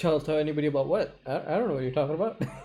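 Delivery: quick, rattled-off voice of feigned innocence.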